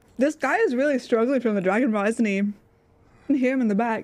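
speaking with mouth full of food. Speaker keeps eating while greeting people and chatting: talking with mouth full. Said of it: "eating with my mouth full".

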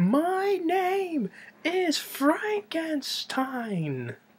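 play-acted swooping scream, very high and very slow. Retelling a film scene after being called Doctor Frankenstein: imitating a scream. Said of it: "he screams out".

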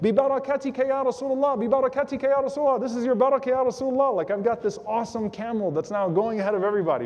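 thrilled, eager, called out across a distance. Retelling a young man calling out on his fast camel: imitating an excited calling out. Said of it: "he's calling out to the Prophet".

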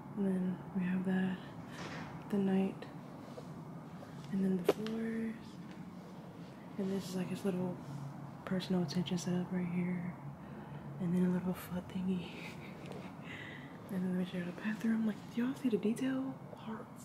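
very soft, hushed, quiet whisper. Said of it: "I'm talking real quiet because he's in the bathroom".

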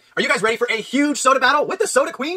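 high-pitched voice cracking partway through. Retaking a video intro for the others, voice cracking. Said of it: "Why did your voice crack".

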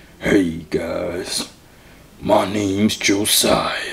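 put-on deep voice. Greeting other players in a new voice: put-on deep voice. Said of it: "This might be my new deep voice".

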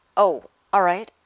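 sharp, very loud, irritable snap. Ron answers Harry, snapping. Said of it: "he snapped".

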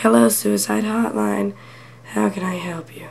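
despairing, hopeless, miserable, life-drained voice. Retelling a phone call, imitating the hotline worker: hopeless, miserable voice. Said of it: "sounded like she wanted to kill herself".

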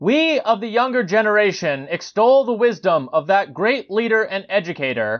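high, loud, belted-out shouted speech.

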